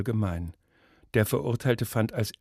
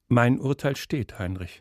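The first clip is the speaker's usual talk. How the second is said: usual speaking voice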